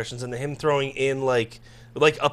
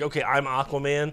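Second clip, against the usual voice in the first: usual speaking voice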